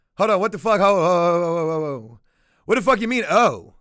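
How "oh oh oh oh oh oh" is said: put-on, slow, deflated, let-down oh's. Retelling how a man answered after checking the information: imitating a deflated oh. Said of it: "a little deflated, little, de-, little defeated".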